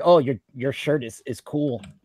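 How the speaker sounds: sweet-sounding but rude, passive-aggressive tone. Explaining passive aggression with an example, in a rude passive-aggressive tone. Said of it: "say I say in a rude manner".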